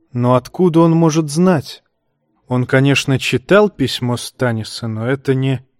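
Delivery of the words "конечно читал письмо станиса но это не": ordinary delivery, nothing marked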